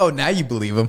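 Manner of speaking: ordinary talk, nothing marked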